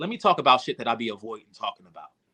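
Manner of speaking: usual speaking voice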